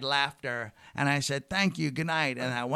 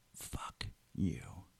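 quiet, hushed, furious whisper; 10 semitones lower, 12 dB quieter than usual. Retelling snapping at a heckler right in her face: retelling a quiet angry outburst. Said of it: "really quietly".

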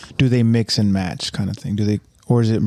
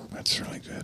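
hushed, very quiet whisper. Responding quietly to another speaker's point about forgiveness: whispering. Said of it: "I have to whisper that".

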